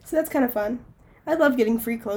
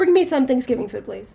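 ordinary talk

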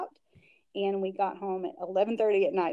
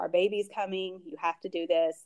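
put-on dead serious, earnest tone. Retelling what Ethan said about the nursery: imitating someone dead serious. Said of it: "he was so serious about it".

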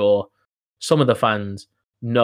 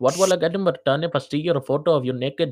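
put-on Indian accent; 5 semitones higher than usual. Retelling a creepy direct message from a stranger: imitating an Indian accent. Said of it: "he sounded exactly like that".

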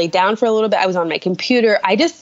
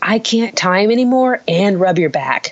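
mock whispering. Retelling what he whispered while timing contractions: imitating a whisper. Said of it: "whispering to me".

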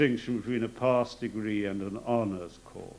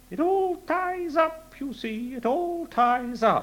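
put-on very high-pitched old schoolmaster voice. Quoting what his old school history master used to say: imitating a high-pitched teacher. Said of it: "he had a high-pitched voice".

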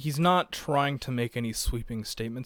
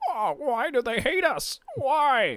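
very high, swooping, put-on albatross character voice; 12 semitones higher, 4 dB louder than usual. Walking through a cartoon page, voicing the albatross's line in an albatross character voice. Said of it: "now I got to do the voice too".

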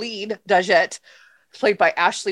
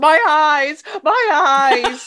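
acted campy horror wail, high, loud, very slow; 7 semitones higher, 6 dB louder than usual. Retelling a film scene where a woman is blinded, imitating a scream. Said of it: "the woman screams".

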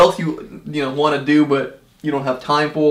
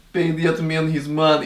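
hammy, exaggerated, fake movie-style Russian accent. Recalling an actor's accent in an old movie: bad John Malkovich Russian accent. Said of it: "the worst Russian accent I've ever heard".

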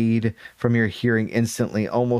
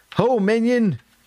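big, booming, bellowing call, very high pitch; 12 semitones higher, 3 dB louder than usual. Reading the story, Caramon calls out from behind the group: Caramon booming. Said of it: "Caramon booms".

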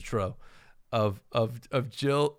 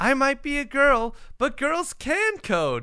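full anime-style voice, much higher; 13 semitones higher, 3 dB louder than usual. Speaker retells the listener's line from reading clue steps, full anime voice. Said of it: "you went like full anime in yours".

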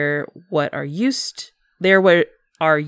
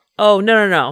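mock sarcastic delivery, higher and louder; 4 semitones higher, 6 dB louder than usual. Acting out how the line is meant: imitating a sarcastic tone. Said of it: "in a sarcastic way".

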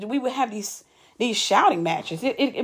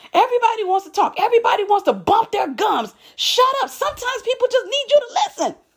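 mock very high, heated, angry shouting; 12 semitones higher than usual. Quoting a woman who shouted at you when you encouraged her, retelling someone shouting. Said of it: "you literally shouts at me".

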